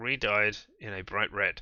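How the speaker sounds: ordinary delivery, nothing marked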